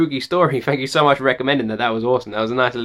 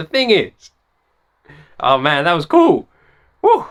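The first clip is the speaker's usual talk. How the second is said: loud, shaken voice, cracking slightly; 4 semitones higher, 4 dB louder than usual. Reacting to the end of a story that gave goosebumps, voice breaking. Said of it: "you got my voice break there a little bit".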